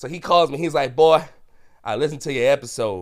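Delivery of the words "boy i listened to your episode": put-on Southern Alabama accent. Retelling his grandpa's phone call about his episode, in grandpa's alabama accent. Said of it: "He still got his Alabama accent".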